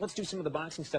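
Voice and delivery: plain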